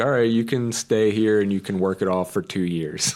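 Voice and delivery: ordinary delivery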